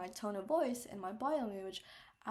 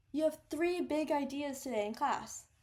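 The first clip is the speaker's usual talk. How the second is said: stressed key words with higher pitch; 5 semitones higher, 5 dB louder than usual. Showing emphasis in a teacher's sentence, stress on three big ideas. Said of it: "my tone of voice was higher pitched as I put emphasis to it".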